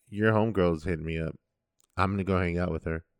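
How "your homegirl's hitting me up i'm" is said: ordinary delivery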